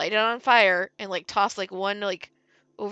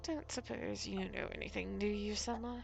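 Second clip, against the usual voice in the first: very quiet mutter under the breath; 16 dB quieter than usual. A storyteller voicing a woman who tilts her head, speaking under her breath very quietly. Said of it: "under her breath very quietly".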